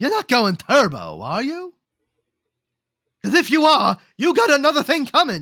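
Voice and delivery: very high, loud, swooping cartoon voice. Talking about how to do King Candy's voice, the speaker performs a King Candy voice. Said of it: "key to doing king candy's voice".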